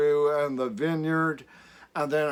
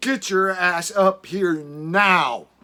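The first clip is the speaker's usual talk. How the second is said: put-on adamant, insistent yell, higher pitch; 3 semitones higher, 5 dB louder than usual. Retelling what she shouted at him, imitating an adamant yell. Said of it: "But she was adamant".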